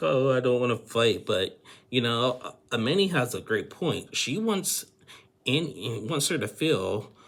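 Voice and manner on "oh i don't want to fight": mock weepy, loud, tearful, crying through words. Retelling what a crying woman in a throuple said: imitating someone crying. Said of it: "and she's still crying, saying, like".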